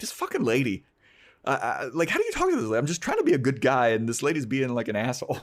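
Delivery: put-on exasperated, frustrated venting, swooping pitch. Retelling a TV scene after Ray hangs up the phone: imitating frustrated Ray. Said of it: "He's kind of frustrated".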